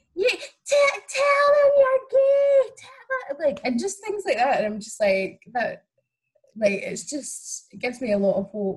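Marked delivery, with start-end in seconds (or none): 0.2-3.5 mock screaming, much higher, louder. Recounting a group of six-year-old girls sitting behind them, retelling kids screaming. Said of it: "just screaming".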